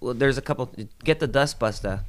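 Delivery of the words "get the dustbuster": put-on Boston accent, higher. Asked to do her voice, quoting her order: imitating her Boston accent. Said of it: "She had a Boston accent also".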